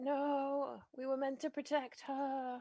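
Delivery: quiet dying gasp, last breath. Game master voicing an enemy the players just killed, with his dying last breath. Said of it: "with his last dying breath, he's like".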